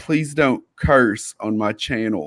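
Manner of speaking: grave, dead-serious, no-joking delivery. Retelling what another person said during an argument: imitating someone super serious. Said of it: "super serious".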